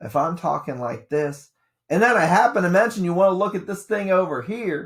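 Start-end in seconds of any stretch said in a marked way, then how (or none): 1.9-4.9 raised, louder, higher emphatic voice. Showing students how a lecturer gets attention: louder for attention. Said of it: "I'm being louder for a reason".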